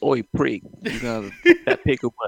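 really cheesy, sing-song, put-on Cockney accent. Imagining out loud how it would have sounded, in a real cheesy Cockney accent. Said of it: "real cheesy Cockney".

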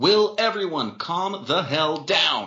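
full, high, drawn-out shouting. Reading a story aloud, a character tells everyone to calm down: yelling. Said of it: "Dean yelled".

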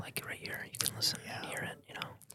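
whispering. Podcast host showing the listeners what a real whisper sounds like; whisper. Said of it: "This is a whisper".

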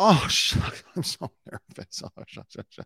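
put-on, jittery, flustered, fake nervous delivery. Retelling what an auditioning contestant says to the judges: imitating a nervous contestant. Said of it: "She just immediately goes back and says".

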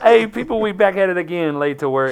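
scratchy, hoarse, slightly high voice. Host greeting viewers at the start of a video, scratchy voice. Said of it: "don't mind my voice. It's still a little scratchy".

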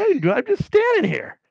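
high-pitched, pleading, protesting tone.

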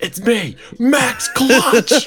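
put-on screaming voice. Retelling how a caller starts each voicemail: imitating someone screaming. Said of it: "he's just screaming at the phone".

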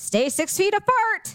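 play-acted loud, high carrying voice. Recounting what you said to someone earlier, in a loud, raised voice. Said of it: "I said that so loud".

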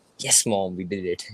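ordinary delivery

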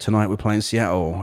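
usual speaking voice

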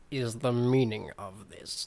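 slow, distinct delivery, each word sounded separately. Reading a quoted line from a book aloud: Severus Snape voice. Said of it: "That was my Severus Snape impression".

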